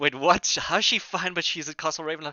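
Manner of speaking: high, loud, stunned and horrified disbelief. Voicing a woman hearing her daughter is at a castle: shocked, horrified disbelief. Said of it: "confused to shocked to horror".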